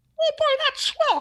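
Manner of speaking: very high, cheerful cartoon mouse voice. Imagining a voice coming out of a box in a dark garage, Mickey voice. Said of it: "That was not the worst Mickey I've ever heard".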